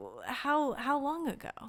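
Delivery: very slow, high, flustered, halting stammer. Retelling the church coordinator's follow-up question: imitating a flustered church lady. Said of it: "she's kinda, like, flustered at this point".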